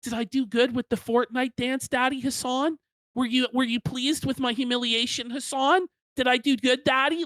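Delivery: needy, approval-hungry voice. Mocking someone in a clip by voicing his plea for approval: mock needy imitation of Destiny. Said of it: "He's like".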